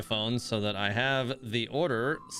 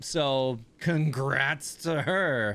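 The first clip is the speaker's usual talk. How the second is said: very slow, drawn-out, sarcastic tone; 2 semitones higher than usual. Speaker congratulates someone, unintentionally sounding sarcastic. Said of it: "I know that sounded sarcastic".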